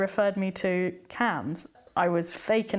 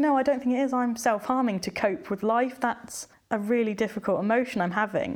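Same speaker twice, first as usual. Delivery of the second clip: ordinary talk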